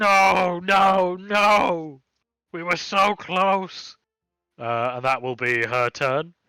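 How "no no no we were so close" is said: very slow, high, drawn-out shrieking screech. Narrating a dragonborn grabbing a dead nun's body, screeching. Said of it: "start screeching".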